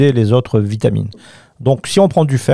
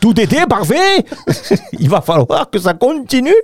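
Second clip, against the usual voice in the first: put-on German accent, very high-pitched; 11 semitones higher than usual. Showing how they sometimes talk to little Sophie: fake German accent. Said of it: "je prends l'accent allemand".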